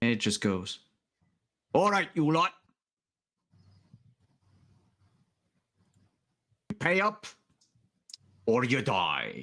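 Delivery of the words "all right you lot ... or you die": high, swooping put-on Scottish accent, sheep-like voice. As narrator, voice a sheep that comes out of a bush, in a Scottish accent. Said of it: "I thought the Scottish sheep was the joke".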